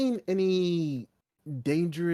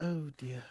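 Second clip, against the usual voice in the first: speaking in a whisper, quieter; 3 semitones lower, 9 dB quieter than usual. Reacting in character to news of creatures nearby: whispering. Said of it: "I've been whispering this whole time".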